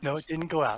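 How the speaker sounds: whispering. Answering someone who thinks the mic went out: whispering. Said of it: "I'm just whispering".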